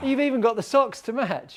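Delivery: high, wide-ranging surprised tone.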